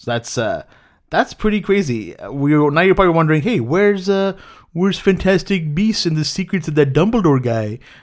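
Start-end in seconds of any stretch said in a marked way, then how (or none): 3.4-7.8 pitched-up, cartoonish sitcom character voice. Voicing a viewer wondering where a film is: Simpsons character voice. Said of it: "I don't know what voice that was".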